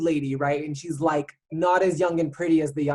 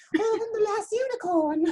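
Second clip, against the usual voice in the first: put-on dainty British voice, higher pitch. Retelling how the unicorn in The Last Unicorn talks: dainty British voice of The Last Unicorn. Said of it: "She talks like this, and she's British, and she's so dainty".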